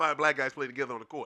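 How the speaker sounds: put-on heavy Boston accent, laid on thick. Retelling what a man said to him about the game, in a thick Boston accent. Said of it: "he said it with that super thick Boston accent".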